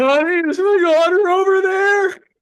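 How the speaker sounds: very high, very loud, tearful crying voice. Retelling what a man said about his daughter, imitating him crying. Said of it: "He's like crying".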